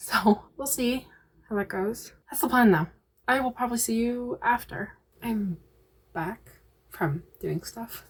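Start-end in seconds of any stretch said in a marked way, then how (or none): 3.3-8.0 hushed, quiet, soft conversational tone. Speaker signs off to viewers while people are sleeping: talking quietly. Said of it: "sorry if I'm talking quietly".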